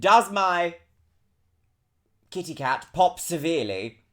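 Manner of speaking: hard-hitting, aggressive, forceful blurt. Retelling the opening line of a stream, re-enacting it with an aggressive delivery. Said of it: "I literally said it so aggressively".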